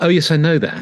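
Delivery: offhand, dismissive, brushing-off tone. Discussing intonation, showing a way of saying it: dismissive, offhand tone. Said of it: "you can say it in a way that's dismisses".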